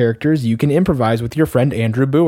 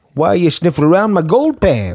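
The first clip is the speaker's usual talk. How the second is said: put-on swooping old-timer gold prospector character voice; 4 semitones higher than usual. Playing a prospector in a scene with a stranger: old prospector voice. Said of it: "I'm going to play prospector".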